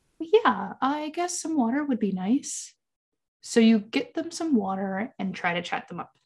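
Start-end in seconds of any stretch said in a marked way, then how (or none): 0.2-2.8 very sheepish, timid, high-pitched voice. Acting out a quiet friend's reply to an offer of water: imitating a very sheepish tone. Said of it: "they say in a very sheepish tone".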